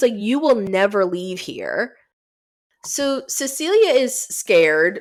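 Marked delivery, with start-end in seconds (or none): 0.2-2.0 put-on angry, distorted, warped voice. Retelling a scene, voicing a pissed-off woman's threat: mock-angry distorted voice. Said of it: "in almost a distorted voice".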